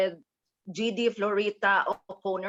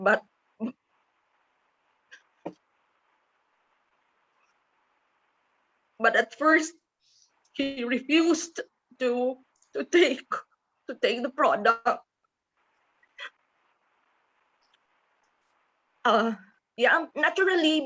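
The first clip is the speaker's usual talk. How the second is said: getting emotional, higher pitch; 4 semitones higher than usual. Telling how her sick husband first refused the product, emotional. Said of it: "I'm emotional. I'm a bit emotional".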